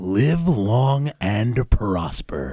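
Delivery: big, epic-sounding voice. The host asks Mr. Epic Voice Man to do it again, epic voice. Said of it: "Mr. Epic Voice Man, can you do that again".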